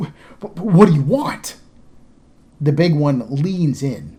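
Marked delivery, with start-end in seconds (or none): 0.0-1.6 stammering, higher, louder, slower. Narrator voicing one of the men facing a big creature, stammering. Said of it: "One of the men stammers out".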